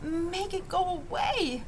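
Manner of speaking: hushed, slow, high, drawn-out half-whisper. Narrator reads Joel speaking to his father, in a half-whisper. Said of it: "Joel spoke in a whisper".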